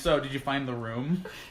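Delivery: flat, calm delivery. Playing a scene, asking the other character a question very calmly deadpan. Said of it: "I'm gonna just say like very calmly deadpan".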